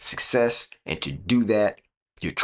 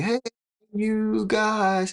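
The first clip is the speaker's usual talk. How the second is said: very high, shrill, loud yelled call; 14 semitones higher than usual. Retelling how she called everyone from the kitchen, retelling a loud yell. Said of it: "she would yell it really loud".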